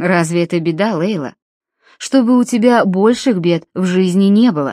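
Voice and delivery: plain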